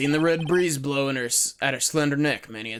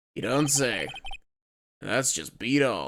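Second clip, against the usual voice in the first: put-on American western accent, decently done; 3 semitones lower than usual. Showing off an accent after a story, speaking in a Western accent. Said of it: "I can do a Western accent decently well".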